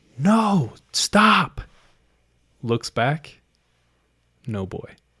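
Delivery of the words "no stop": play-acted very high, shrill yell. Retelling a ten-year-old girl turning around and yelling; retelling a yell. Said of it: "she turns and yells".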